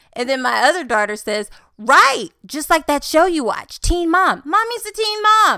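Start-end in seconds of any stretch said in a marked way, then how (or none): 1.8-5.6 put-on loud, high, excited childlike shouting. Retelling daughters shouting in public, imitating kids shouting. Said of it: "they're, like, shouting it".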